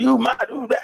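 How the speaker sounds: very high, ranting, scolding voice. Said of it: "she going off".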